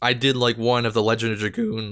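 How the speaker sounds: voice cracking. Recalling stories the speaker once typed up on a computer, voice cracking. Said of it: "like like like that voice crack".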